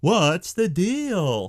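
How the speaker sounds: swooping comic tune, pitch swings up, "deal" drawn out. Pitch a name for a new segment to your listeners, doing your best Jerry Seinfeld impression. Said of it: "That's my best Jerry Seinfeld impression".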